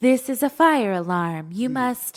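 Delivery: put-on small woman's voice, announcer style. Retelling a fire alarm going off at seven a.m., imitating a little woman's voice. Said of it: "this little woman's voice started saying".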